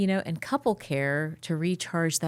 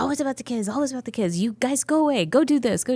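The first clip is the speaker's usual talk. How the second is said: put-on Indian accent, pitched up; 7 semitones higher, 5 dB louder than usual. Quoting the speaker's late mother-in-law, Indian accent. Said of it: "She would say in her Indian accent".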